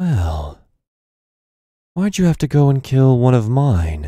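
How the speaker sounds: tiny, small, disembodied inner voice. Narrating to the players, the storyteller voices a small voice in their heads: small voice in your head. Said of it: "a small voice in your head says".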